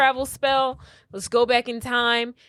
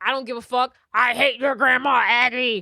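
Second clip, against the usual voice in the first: put-on angry man voice, mock outburst; 4 dB louder than usual. Retelling a story, voicing a man's reply to a visitor: imitating an angry man. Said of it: "He angry".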